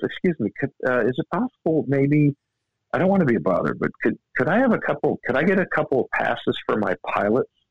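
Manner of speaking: very polite, timid, shy, faltering delivery. Retelling a golfer asking the woman at the tournament office for something: imitating Tiger Woods shyly. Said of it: "really nice, like, super shy".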